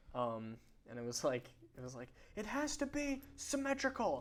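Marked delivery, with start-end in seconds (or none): 2.3-4.2 put-on screaming, pitched higher. Retelling a gag video of an on-set rant: imitating someone screaming. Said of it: "he's screaming".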